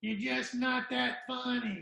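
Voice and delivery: put-on frail, creaky little old voice. Retelling what a comedian said: imitating a little old voice. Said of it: "her little old voice go".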